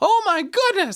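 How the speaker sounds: very high, loud, panicked shriek.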